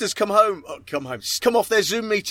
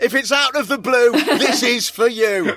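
mock shout, slow and drawn out like a slogan; 4 semitones higher, 4 dB louder than usual. Mimicking someone standing on a grave shouting a slogan: mock shouting on a grave.

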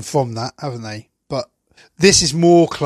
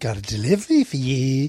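heavily camp, put-on voice; 4 dB quieter than usual. Retelling how a man delivered a line, imitating his camp voice. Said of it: "he puts on this really camp voice".

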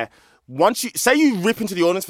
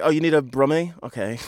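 ordinary talk, nothing marked

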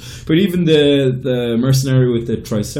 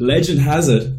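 ordinary delivery

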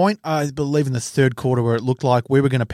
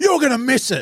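very high, jeering, yelled taunting tone; 10 semitones higher than usual. Retelling a man taunting a player lining up a goal kick, retelling a yell. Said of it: "he yelled out".

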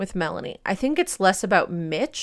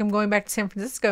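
ordinary delivery

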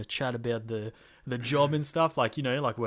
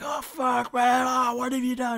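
very high, anguished yell of hurt; 13 semitones higher, 5 dB louder than usual. Retelling crushing a guy with a backflip, imitating someone screaming in pain. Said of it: "starts screaming like he's actually in pain".

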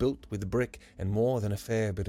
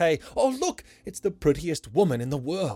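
put-on high-pitched shout in a boy's voice; 7 semitones higher, 4 dB louder than usual. The boy sees the pretty girl's face on the man's phone, shouted. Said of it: "The boy stomped and shouted".

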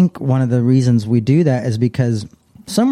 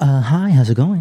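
put-on work phone voice; 2 semitones higher than usual. Retelling how an ex-wife answered calls at work, imitating her work voice. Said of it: "you get your work voice on?".

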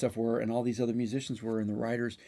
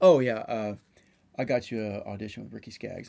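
casual, nonchalant, offhand, like it's nothing. Retelling how Mike casually announced the audition: imitating Mike's nonchalant delivery. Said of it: "he literally nonchalantly, like it was nothing, he goes".

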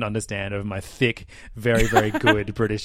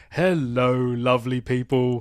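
put-on high-energy British accent, host style; 3 semitones higher than usual. Speaker quotes the British host of Nintendo Life videos, in a British accent. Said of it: "this British guy".

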